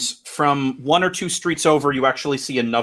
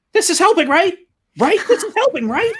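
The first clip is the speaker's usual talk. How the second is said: rapid high-pitched chatter; 4 dB louder than usual. Imitating the speaker's sister for a listener, in a fast high-pitched voice. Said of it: "talks really fast and she has a really high pitched voice".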